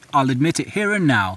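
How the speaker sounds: ordinary talk, nothing marked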